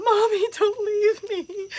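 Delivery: very high, shrill, loud, stretched-out scream. Telling what would be screamed in the store: imitating screaming. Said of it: "scream out".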